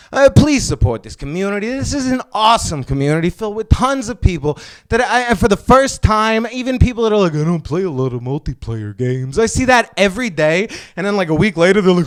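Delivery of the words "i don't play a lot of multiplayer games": silly voice, pitched low. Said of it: "I just do it in a silly voice".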